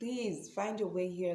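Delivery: outright, acted-out pleading, begging tone. Retelling talking to him while in pain: retelling own begging. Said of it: "I was literally begging him".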